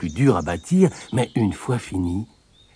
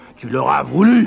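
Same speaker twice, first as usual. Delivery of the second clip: loud, growling wolf voice; 6 semitones higher, 5 dB louder than usual. The big bad wolf answers the second little pig, growled.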